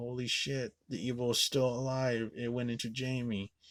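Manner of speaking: mock shattered, tearful, distraught crying outburst. Recapping a film's final scene, imitating Loomis crying. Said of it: "Loomis is breaking down, crying like".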